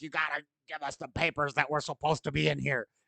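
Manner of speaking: panicked, frantic, freaked-out insistent tone. Retelling how people react after the raid: imitating people freaking out. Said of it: "people are freaking out".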